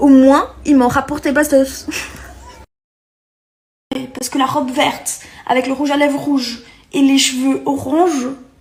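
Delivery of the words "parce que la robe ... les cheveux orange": with a Brazilian accent. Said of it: "Vous avez reconnu ce joli petit accent".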